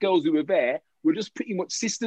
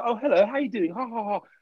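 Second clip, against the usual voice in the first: put-on prim, well-mannered, innocent girl voice with a laugh; 3 semitones higher than usual.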